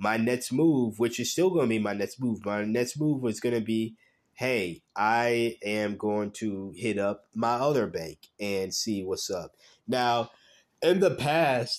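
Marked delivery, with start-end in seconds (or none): 9.9-11.8 slow, pitched-up speech through a yawn. Explaining a plan about crypto purchases, speaking through a yawn. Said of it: "sorry, I was yawning".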